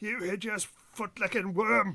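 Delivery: guttural shouting. Narrator voices the insults the players hear as they get closer, guttural shouting. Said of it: "the guttural voice shouting out".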